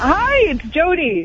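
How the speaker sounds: happy cheerful tone. A caller greets the radio show hosts on air, sounding happy. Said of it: "You sound happy".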